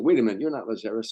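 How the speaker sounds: plain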